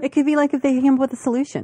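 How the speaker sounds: very fast, flat rush.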